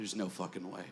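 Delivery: very quiet, very low mutter under the breath. Retelling picking up lip balm in a gift shop: muttering under breath. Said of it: "under my breath, I just said".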